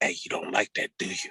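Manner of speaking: soft, breathy whisper. Retelling reaching a little kid and pulling his hair: retelling a whisper. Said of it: "then I whispered to him".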